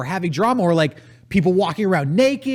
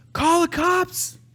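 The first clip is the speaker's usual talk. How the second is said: very high-pitched screaming; 10 semitones higher than usual. Retelling how a neighbor was screaming at his window: imitating a neighbor screaming. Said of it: "But he was screaming".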